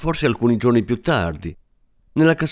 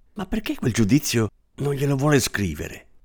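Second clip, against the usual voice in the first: timid, shy voice; 3 semitones higher, 4 dB quieter than usual. Signora Marie smiles, then after a while asks the narrator; asking timidly. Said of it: "mi chiese timidamente".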